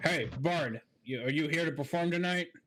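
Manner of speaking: put-on big, burly orcish boy voice. Narrating to players, an orc calls out to the bard, in a big orcish boy voice. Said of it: "in a big orcish boy voice".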